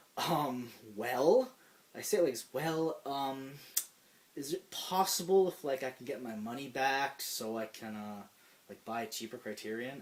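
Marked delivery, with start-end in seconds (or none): none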